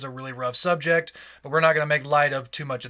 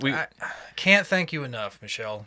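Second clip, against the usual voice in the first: gushing, dripping sarcasm, swooping sing-song tune. Joining in on a thank-you for an awful topic suggestion: sarcastic thank you. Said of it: "a big sarcastic thank you".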